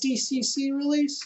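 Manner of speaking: voice suddenly jumping very high. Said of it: "my voice got really high there".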